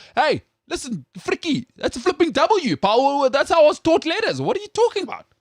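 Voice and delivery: Afrikaans-accented speech. Showing an Afrikaans guy how Afrikaans people would say water, in an Afrikaans accent. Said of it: "the Afrikaans people would say water".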